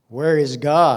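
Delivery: loud demanding tone. Retelling a pastor questioning a silent little boy, retelling a louder demand. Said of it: "said with a louder voice".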